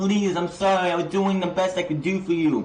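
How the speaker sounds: tearful, sorry, pleading, begging tone. Retelling a wrestling scene where MJF kneels to Cody: imitating MJF begging.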